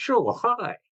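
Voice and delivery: poor put-on Dutch accent, pitched high. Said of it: "I can't do a Dutch accent".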